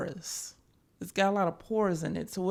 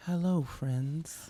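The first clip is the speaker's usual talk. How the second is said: put-on creepy voice, lower pitch; 4 semitones lower, 3 dB quieter than usual. Retelling how a creepy coworker would come in: imitating a creepy coworker. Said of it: "But he was creepy".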